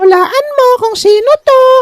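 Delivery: very high-pitched, put-on feminine woman's voice. Approaching someone and asking him to guess who it is, put-on woman's voice. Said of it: "boses babae".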